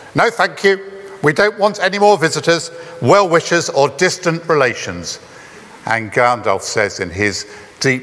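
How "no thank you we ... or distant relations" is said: high, loud, acted-out shout. Recounting the wizard knocking at a door on a birthday eve, retelling a shouted reply. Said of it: "gets this shouted response".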